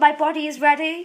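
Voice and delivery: ordinary talk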